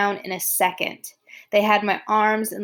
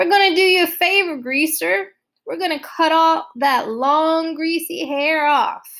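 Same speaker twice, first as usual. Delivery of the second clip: exaggeratedly, overly friendly, pitched-up voice; 7 semitones higher, 3 dB louder than usual. Narrator reads one of them walking around the narrator, overly friendly. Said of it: "one said in an overly friendly voice".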